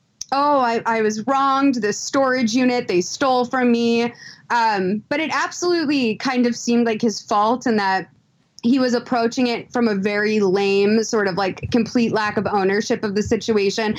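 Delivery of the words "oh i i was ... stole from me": usual speaking voice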